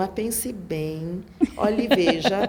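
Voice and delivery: very slow, unhurried, drawn-out musing speech.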